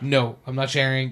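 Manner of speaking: mock sarcastic, dismissive tone. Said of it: "her sarcastic".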